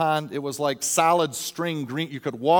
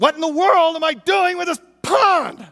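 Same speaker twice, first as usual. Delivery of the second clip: very high, shrill, disgusted yell; 14 semitones higher, 8 dB louder than usual. After falling by the pond, the speaker retells what he yelled out: retelling a disgusted yell. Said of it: "I yelled out, just in disgust".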